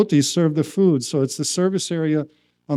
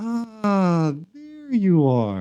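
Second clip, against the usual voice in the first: put-on very slow, sweet, sing-song, long drawn ah; 4 semitones higher, 4 dB quieter than usual. Retelling a teacher looking down kindly, imitating a sweet tone. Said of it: "so sweetly looks down at me and says".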